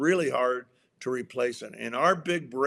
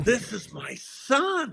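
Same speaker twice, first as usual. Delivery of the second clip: put-on angry, terrifying divine voice, higher; 8 semitones higher than usual. Retelling the Transfiguration story, acting out God's angry, terrifying voice. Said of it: "very angry, terrifying voice of God".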